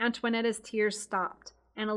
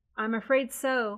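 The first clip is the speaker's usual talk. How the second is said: plain reading voice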